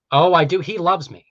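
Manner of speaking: loud, openly sarcastic tone. Asked whether they know a certain atheist figure, answering: sarcastic. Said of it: "You're being sarcastic".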